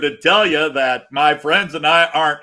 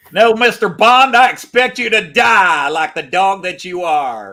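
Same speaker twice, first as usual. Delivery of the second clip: slow, put-on East Tennessee drawl; 3 semitones higher than usual. Joking that great villains never have this accent, east tennessee accent villain. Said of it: "accent from East Tennessee".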